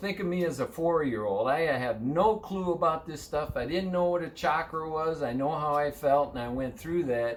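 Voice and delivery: plain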